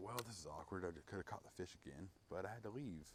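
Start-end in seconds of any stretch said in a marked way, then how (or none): none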